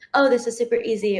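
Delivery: ordinary delivery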